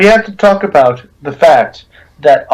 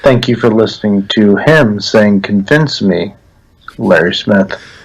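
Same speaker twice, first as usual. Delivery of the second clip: put-on public radio announcer voice, lower; 7 semitones lower than usual. Taking a turn at the put-on NPR voice. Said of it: "Can I do one too?".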